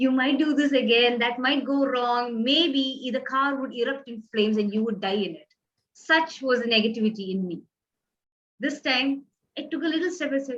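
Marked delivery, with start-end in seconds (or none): none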